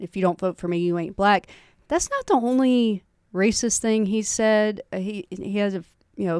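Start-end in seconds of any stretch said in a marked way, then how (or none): none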